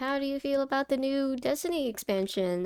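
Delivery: dry, sarcastic tone, acted out. Retelling what a friend asked about the new expansion: imitating a sarcastic question. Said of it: "sarcastically saying".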